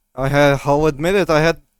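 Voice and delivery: high, loud, relieved and joyful. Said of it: "He comes around them, approaching all of you".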